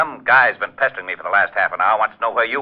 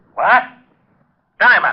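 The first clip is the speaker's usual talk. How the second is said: outright shouting, high-pitched yell; 9 semitones higher, 3 dB louder than usual. Hearing the news about a body, yelling at Diamond: yelling. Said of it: "You better watch that yelling".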